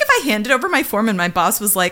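ordinary talk

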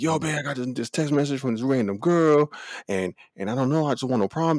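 mock screaming and yelling. Retelling a video of a man confronting his girl: imitating someone yelling. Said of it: "came out the cut screaming and yelling".

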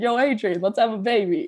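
tongue-in-cheek, joking, tossed-off delivery. Joking to her husband while waiting at the hospital: joking Rocky impression. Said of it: "jokingly was like".

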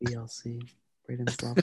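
breathy whisper into the mic. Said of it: "He's getting quieter".

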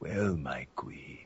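low, soft, hushed speech while breathing in. Explaining how the Vamp voice was made, in Vamp voice spoken on inhale. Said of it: "I'm mostly talking on the inhale instead of on the exhale".

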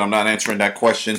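plain

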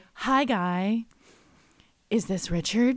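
put-on, mock-breathy voice. Recounting a woman's phone call to a man, imitating a breathy voice. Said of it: "we can only call it a breathy phone call".

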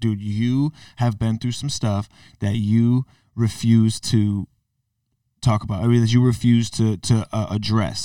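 usual speaking voice

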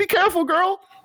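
shrill, very high-pitched shout. Yelling a warning in character as a companion runs into a fight: yelling. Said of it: "I'm gonna yell".

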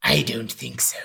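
acted intense whispering. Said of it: "his line delivery".

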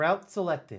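synthetic, computerized robot voice. Placing quotes on the A and B route choice, doing a computerized voice. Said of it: "a computerized voice thing".

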